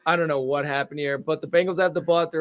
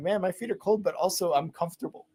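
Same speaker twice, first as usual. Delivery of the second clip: normal talking voice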